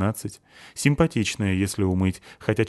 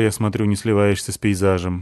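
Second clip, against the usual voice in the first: ordinary delivery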